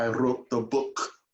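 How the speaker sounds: put-on Scottish accent. Quoting what Lynette says whenever the film comes up, imitating Lynette's Scottish accent. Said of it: "tries to do it in the Scottish".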